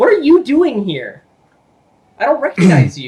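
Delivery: loud, high, swooping, upset and confused. Voicing a confused man who confronts you before leaving, upset and confused. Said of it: "but he's upset at you".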